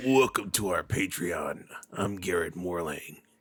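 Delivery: put-on deep, raspy trailer-style voice. Imitating the other speaker going into the ad: imitating Garrett's deep raspy smoker's voice. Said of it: "It's a good Garrett".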